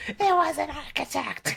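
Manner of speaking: mock very high, ragged, rough shriek. Retelling how a character stops and screams: imitating a scream. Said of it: "she just stops and screams".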